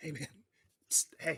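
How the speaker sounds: pretend whisper. Acting out asking the angler beside you for a net: mock whisper. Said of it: "Just whisper".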